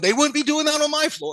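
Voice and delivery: put-on very high, ranting yell. Venting to a listener, retelling the time he yelled at people: retelling a yell. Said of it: "I'm starting yelling at the people".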